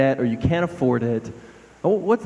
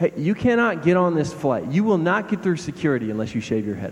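mock dead-serious, no-joke, straight-faced official deadpan. Acting out a security officer refusing boarding: imitating a straight-faced officer. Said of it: "tells you straight-faced".

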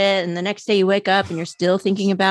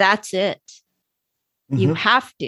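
put-on, very sure and confident tone. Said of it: "it's very sure".

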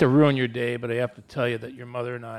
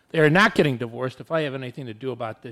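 plain

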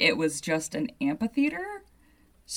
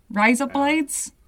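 loud, high-pitched put-on Australian accent; 8 semitones higher, 5 dB louder than usual. Joking that this is how Australians speak: Australian accent. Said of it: "That's how you speak in an Australian accent".

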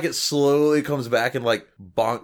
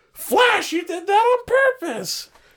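very high, pissed-off, blaming and accusing tone. Retelling a Peter Parker gym scene, imitating a girl pissed off at Flash. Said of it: "the girl gets all pissed off".

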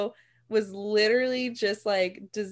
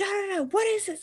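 put-on angry outburst, higher pitched; 12 semitones higher than usual. Retelling a TV episode where the father finds birth control: imitating Hulk Hogan freaking out. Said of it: "freaking out".

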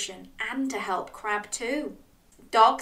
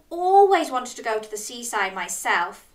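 usual speaking voice

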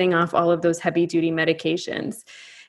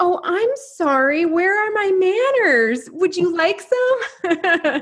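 put-on very high, guileless, innocent voice; 11 semitones higher than usual. Retelling a mother's offer while hitting a bong: imitating mom's innocent tone. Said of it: "she's just innocent and says".

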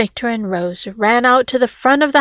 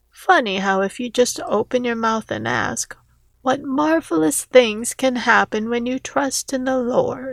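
plain reading voice

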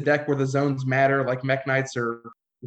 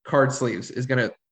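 normal talking voice

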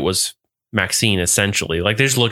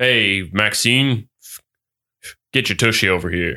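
put-on Texas accent. Asked by a co-host for a Texas accent, the speaker tries one: Texas accent. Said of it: "Can you give me a Texas accent?".

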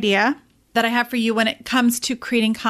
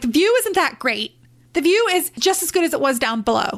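put-on furious, irritated voice; 4 semitones higher than usual. Retelling reaching the top of a hike: imitating her angry self. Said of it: "And I was like".

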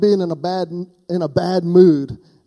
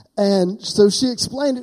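plain

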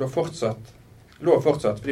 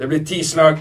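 loud, emotionless, unfeeling, matter-of-fact voice; 3 semitones higher, 6 dB louder than usual. The inspector announces the punishment to Maren, loud and unfeeling. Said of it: "sa inspektøren høyt og følelsesløst".

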